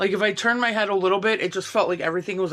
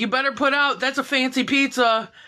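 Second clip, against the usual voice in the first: play-acted playful heckling shout, higher pitch; 6 semitones higher than usual. Retelling shouting random things at people on the street, retelling own yelling. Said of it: "I'm just yelling random shit out to them".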